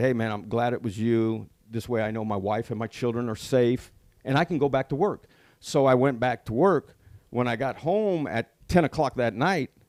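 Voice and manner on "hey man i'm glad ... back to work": ordinary talk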